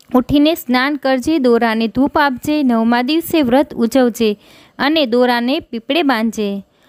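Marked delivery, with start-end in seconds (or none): none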